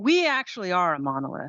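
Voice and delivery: openly sarcastic tone with swooping pitch. Replying to another speaker's remark with a joke: sarcastic. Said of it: "I'm being sarcastic".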